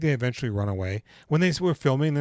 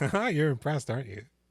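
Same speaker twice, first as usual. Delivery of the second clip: usual speaking voice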